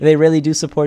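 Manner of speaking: laughing, words broken up by laughter. Thanking viewers for their super chats, laughing while talking. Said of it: "sorry, I'm laughing".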